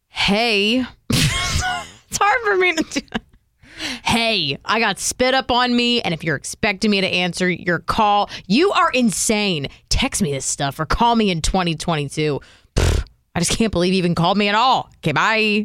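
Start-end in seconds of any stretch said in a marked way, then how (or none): 4.0-15.6 cross, weary, fed-up, angry, tired ranting. Reading a new voicemail greeting as asked, the speaker sounds angry and tired. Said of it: "You have to read it angry".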